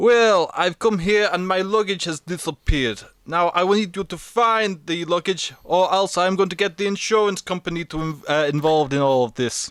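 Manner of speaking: put-on Russian accent, played as a character. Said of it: "are you doing Scottish or are you doing Russian".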